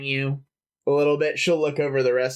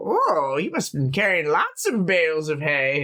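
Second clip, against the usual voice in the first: put-on flirtatious woman's voice; 3 semitones higher than usual. Describing a woman who grabs you as you escort her inside, imitating a flirty woman. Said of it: "And she'll be like".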